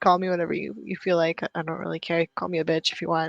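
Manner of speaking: usual speaking voice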